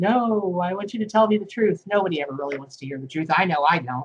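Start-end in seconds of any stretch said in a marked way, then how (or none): 0.0-1.8 trembling, wavering, shaky, unsure voice. Retelling how reading clients answer about hearing the truth: imitating a shaky reply. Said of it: "they always shakily say".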